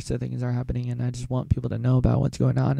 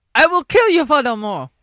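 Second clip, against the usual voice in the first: British wizard voice, much higher, louder; 10 dB louder than usual. Listing voices he can do, the speaker does a Harry Potter impression. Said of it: "Harry Potter".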